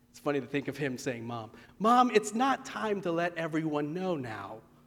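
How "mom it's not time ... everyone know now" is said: hushed voice, quieter, much slower. Speaker retelling a story, quoting a son answering his mom, in a hushed voice. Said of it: "In a hushed voice".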